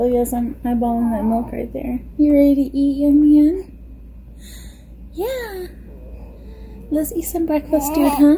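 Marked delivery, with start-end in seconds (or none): 0.0-2.0 put-on baby-like voice. Speaking for the baby who is about to feed: voicing the baby's thoughts. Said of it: "He's like".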